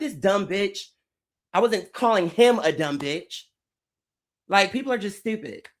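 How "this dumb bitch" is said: acted-out, frustrated, cussing rant. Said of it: "So I was screaming or I was cussing".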